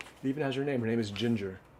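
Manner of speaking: ordinary delivery, nothing marked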